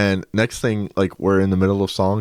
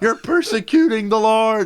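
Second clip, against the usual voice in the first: imitated man's yell, higher pitch; 14 semitones higher than usual. Retelling how a man being dragged out was fighting: imitating a man yelling. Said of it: "he's yelling. He's like".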